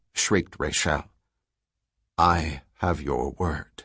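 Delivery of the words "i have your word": soft, quiet, low, slow, measured voice. Narrator reads Selden answering Rachel as the sergeant aims at him, quietly. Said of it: "said Selden quietly".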